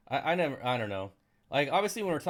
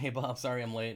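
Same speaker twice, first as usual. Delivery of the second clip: usual speaking voice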